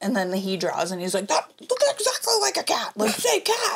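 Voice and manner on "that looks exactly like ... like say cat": very high, swooping, raging voice. Retelling a game night, imitating a dad who is raging and competitive. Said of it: "a raging fucking, like, competitive".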